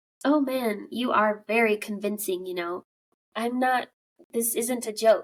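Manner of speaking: ordinary talk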